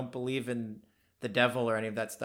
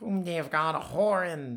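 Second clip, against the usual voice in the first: put-on high, whistly old prospector voice, whistling through teeth; 5 semitones higher than usual. Reading a passage aloud in an old prospector voice. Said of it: "an old guy with like a whistle in his teeth".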